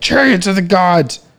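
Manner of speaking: put-on screaming. Speaker imagining listeners shouting the answer at them, imitating audience screaming. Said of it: "screaming at me like".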